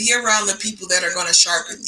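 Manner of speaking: ordinary delivery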